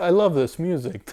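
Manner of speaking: emotional, high voice, close to tears. Talking about a long-awaited Cowboy Bebop album's music, tearing up. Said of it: "I don't know why I'm tearing up".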